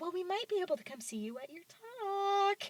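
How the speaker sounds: small, cheeky voice. Retelling a visit, the speaker quotes Victoria in her little cheeky voice. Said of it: "she says it in this very little cheeky voice".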